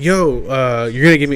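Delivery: normal talking voice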